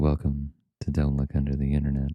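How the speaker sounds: ASMR-style voice. Welcoming listeners to the podcast after joking about a calm episode: asmr voice. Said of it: "You have a very nice A S M R voice".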